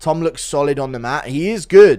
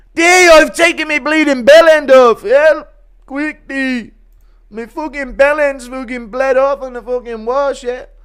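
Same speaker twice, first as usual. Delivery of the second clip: loud, high-pitched, panicked blurted delivery; 10 semitones higher, 6 dB louder than usual. In a run of impressions, doing Conor's weightlifting gone wrong. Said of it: "Impression of Conor's weightlifting gone wrong".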